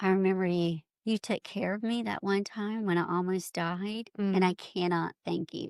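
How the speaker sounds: plain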